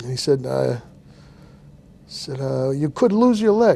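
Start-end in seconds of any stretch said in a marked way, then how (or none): 2.7-3.8 put-on light Italian accent. Retelling what the doctor told you, in his italian accent. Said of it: "he had a bit of an Italian accent".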